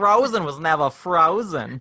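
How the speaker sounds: slow, drawn-out, put-on Brooklyn accent. Repeating another speaker's line as a joke: Brooklyn accent. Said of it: "Say it now with a Brooklyn accent".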